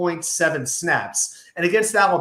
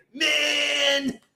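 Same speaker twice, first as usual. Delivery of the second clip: "man" held long on a very high pitch; 9 semitones higher than usual. Showing how to do an impression by holding the word man: Scott Steiner impression. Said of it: "You wanna do a good Scott Steiner impression?".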